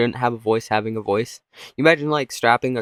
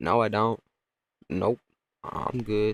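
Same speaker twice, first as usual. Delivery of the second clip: slow, awkward talking-dog voice; 6 dB quieter than usual. Acting out a dog turning down a playdate: talking dog voice. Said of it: "And the dog's like".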